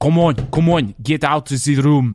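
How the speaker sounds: bad, unconvincing put-on French accent. Acting out a checkout demand to leave the room, in a bad put-on french accent. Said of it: "so let's do French".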